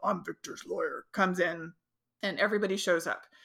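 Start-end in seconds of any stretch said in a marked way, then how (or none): 0.0-1.0 mock deep voice, quieter. Retelling a lawyer's arrival at the door, imitating a deep voice. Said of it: "this tall, deep voice".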